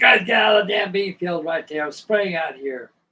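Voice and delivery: acted-out loud yelling. Retelling how the pilot yelled at them in the bean field: retelling a yell. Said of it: "He was yelling at us".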